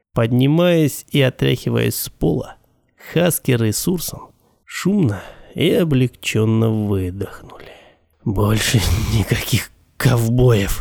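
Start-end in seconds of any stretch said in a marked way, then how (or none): 8.3-10.8 tired, weary, spent, done-with-it tone. After the fight, Hasker gets up off the floor and speaks, weary. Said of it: "устало произнес Хаскер".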